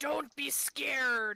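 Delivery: pirate-sounding voice. Speaking in character in a strange fog: pirate-sounding voice. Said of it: "that sounded like a pirate".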